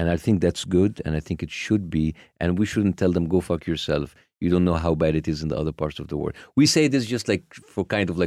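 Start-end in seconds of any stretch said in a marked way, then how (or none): none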